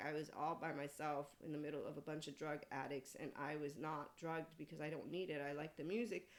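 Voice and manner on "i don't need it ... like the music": ordinary talk, nothing marked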